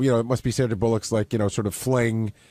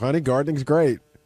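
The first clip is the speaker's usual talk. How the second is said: mock, pointedly insincere, sarcastic praise; 3 semitones higher than usual. Imitating how an interview guest said gardening is great: sarcastic tone. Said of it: "he said it in such a sarcastic way".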